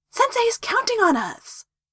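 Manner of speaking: keen, eager, full of enthusiasm. A student answers a teammate's doubt about a mission, excited. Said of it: "Naruto said excitedly".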